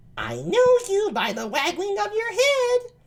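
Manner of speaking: very high-pitched voice. Reading a play aloud, voicing Ursula to Antonio: high-pitched Ursula voice. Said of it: "I really high-pitched voice".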